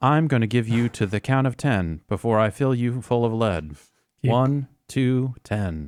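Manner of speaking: voice like a phone voice assistant. Speaker joking about what the phone assistant says back, in a Siri impression. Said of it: "And then the Siri comes on and says".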